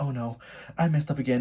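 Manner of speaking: put-on trembling voice, panicked and shaky. Retelling a partner trembling after being stopped: imitating someone trembling. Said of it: "he starts to, like, tremble".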